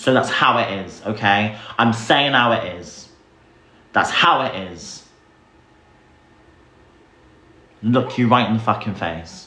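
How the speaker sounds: worked up, frustrated, agitated. Speaking to chat before saying they need to calm down: worked up and frustrated. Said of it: "I need to calm down".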